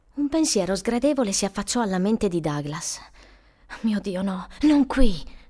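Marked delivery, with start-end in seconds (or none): 3.8-5.2 muttered under the breath, murmured, slower. Douglas, struck by an unpleasant thought, answers his companion, murmured. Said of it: "mormorò".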